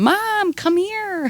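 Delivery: mock, very high, screamed yelling call. Retelling calling for mom after waking up: retelling own screaming. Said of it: "I'm screaming for my mom".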